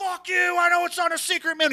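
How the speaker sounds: mock, shrill, very high, furious screaming rage. Retelling a customer screaming at a cashier: imitating a man screaming. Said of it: "He starts screaming".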